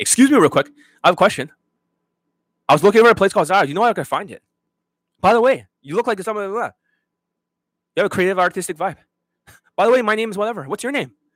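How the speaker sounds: high, super-fast, nonstop, rattled-off rapid chatter. Imitating how these guys talk to women: imitating someone talking super fast. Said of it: "this is how they talk".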